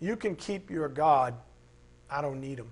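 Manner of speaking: put-on scornful, mocking, dismissive tone. Speaker quotes people who publicly denounce god, in a mocking tone. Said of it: "all those people who say mockingly".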